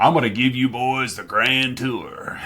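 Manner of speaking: put-on Texan oil tycoon voice. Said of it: "Texan oil tycoon voice".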